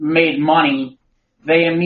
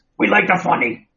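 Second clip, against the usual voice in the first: put-on monster voice; 3 semitones higher than usual. Reviewing a Venom movie with co-hosts, Venom voice. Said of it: "making the Venom voice".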